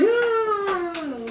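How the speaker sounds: whining, pitched high.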